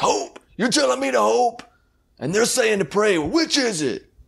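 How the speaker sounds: very high, exasperated, furious outburst, acted out. Retelling a movie scene where a man answers a doctor: imitating an angry outburst. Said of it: "gets really mad at God".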